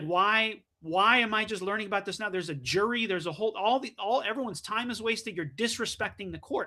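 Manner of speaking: plain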